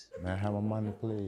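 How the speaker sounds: quiet, soft voice. Showing someone how to ask for their money, soft, not raising voice. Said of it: "That's soft enough".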